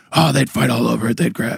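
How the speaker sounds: put-on rough, scratchy, creaky coach-style voice. Retelling a conversation, give the answer you got from him as a Doc Rivers impersonation. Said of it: "That's my Doc Rivers impersonation".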